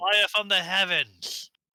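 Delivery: very loud, high-pitched battle cry yell. Calling out to Taco: yelling. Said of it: "I yell at Taco".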